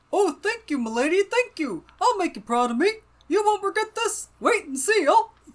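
very high, put-on storybook bear voice. Reading a character's grateful line aloud from the book: reading Brog in the bear voice. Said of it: "Brog with that voice".

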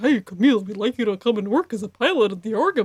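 awful low, deep cartoon bear voice. Joking about a character's awful voice, say his line in the Yogi Bear voice. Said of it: "Abe has Yogi Bear voice".

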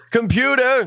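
very high yell. Calling on the ship's computer to open the airlock door: yelling. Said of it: "I'm just yelling".

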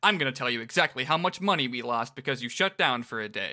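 ordinary talk

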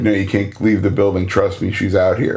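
ordinary talk

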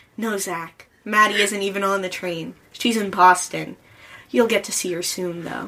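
ordinary delivery, nothing marked

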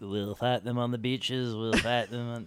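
terrible, too-northern English orator voice. Quoting a wartime speech in a terrible Churchill impression. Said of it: "That was a terrible Churchill impression".

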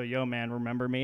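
ordinary talk

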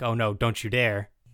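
mock super-offended tone. Retelling what Gumshoe said to Captain Justice; mock super-offended. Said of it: "Gumshoe's like super offended".

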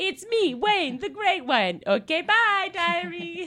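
very high, very loud, booming, slow drawn-out voice. Reading out a pretend diary entry: Wayne Gretzky impression. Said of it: "What a spot-on impression".

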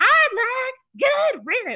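tiny little voice, very high and swooping. Quoting a cast member's roast line, in Brandy's little voice. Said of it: "I love Brandy's little, like, voice".

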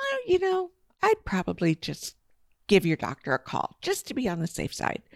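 quiet, calm delivery. Recounting a phone call, the speaker retells their advice, speaking calmly. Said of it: "So I calmly say to them".

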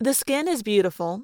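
plain

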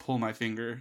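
normal talking voice

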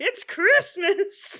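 loud high-pitched comic voice. Performing a requested line as Bobcat Goldthwait impression. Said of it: "do a Bobcat Goldthwait saying".

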